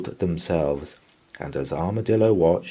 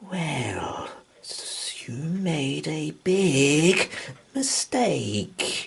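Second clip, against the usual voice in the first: big, drawn-out, pitched-up hissing snake voice; 8 semitones higher, 3 dB quieter than usual. Reading a story, the snake answers the armadillo: hissing snake voice. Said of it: "hissed the snake".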